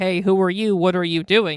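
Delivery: ordinary delivery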